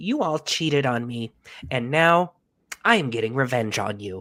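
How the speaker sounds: snarky, chastising scolding tone. Complaining about the tone others use, imitating a chastising tone. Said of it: "sounds like they're just chastising every single one of you".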